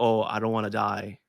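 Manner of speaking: mock crying voice. Retelling going into mom's room at night as a kid: imitating own childhood crying.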